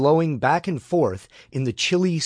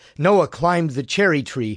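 usual speaking voice

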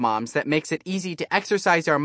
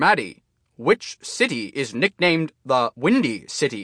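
barked, robotic, machine-like gym-teacher quizmaster voice. A talking robot mat quizzing a player, barking in a robotic voice. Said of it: "Barks Matt's robotic voice".

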